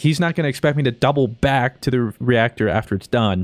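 ordinary delivery

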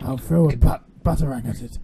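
put-on voice, straining the throat. Gamer playing as Batman faces a locked door, Batman voice. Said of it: "I'm [name]. ... [name]'s harder. Does it actually hurt my throat to do that? I've been doing way too much screamo".

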